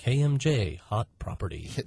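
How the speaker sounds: radio ad announcer voice. Closing a radio-style property ad, in a radio announcer voice. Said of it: "that is your announcer voice".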